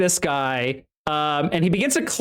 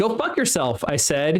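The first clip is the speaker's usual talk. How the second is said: ordinary delivery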